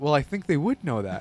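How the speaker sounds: honestly puzzled, sincere, genuinely confused, acted. Recalling a remark you once made, insisting it wasn't sarcastic; retelling genuine confusion. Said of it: "I remember like being genuinely confused".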